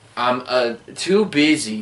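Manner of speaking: slow, halting, stumbling delivery with filler pause. Correcting a retelling of Tommy's film line: imitating Tommy's halting delivery. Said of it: "you forgot to add a bunch of, uh".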